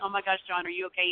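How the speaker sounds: usual speaking voice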